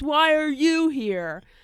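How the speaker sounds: mock hostile heckler yelling angrily, high pitched. Recalling how a woman was heckled, imitating an angry male heckler. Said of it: "This like angry male voice".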